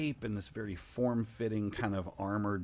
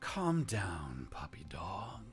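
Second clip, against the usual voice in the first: beautiful, lovely-sounding voice. Narrator voices a woman telling someone called puppy dog to calm down: beautiful voice. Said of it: "she says in this beautiful voice".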